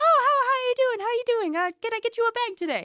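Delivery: very high, cashier-style customer-service voice. A former grocery cashier demonstrating how she greets customers, customer service voice. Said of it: "I developed what I like to call a customer service voice".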